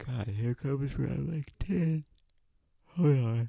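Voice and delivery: high, stretched speech through a yawn. A speaker discussing their purpose, interrupted mid-sentence, yawning. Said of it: "why I'm yawning so much right now".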